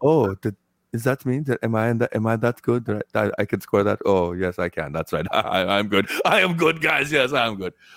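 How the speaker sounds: sheepish, bashful, coy, stumbling self-talk. Imitating a player's grin after scoring a goal: imitating Hedman's coy goal reaction. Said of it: "he's like".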